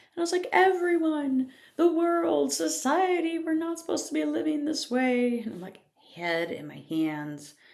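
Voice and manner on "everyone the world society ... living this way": mock very high, loud, tearful crying lament. Retelling own past words to a husband, imitating own crying.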